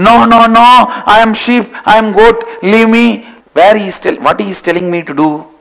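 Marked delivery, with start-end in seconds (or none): 0.0-3.3 mock screaming, higher pitch and slower. Storyteller voices a cub that a lion keeps catching: acting out a scream. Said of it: "That fellow starts screaming".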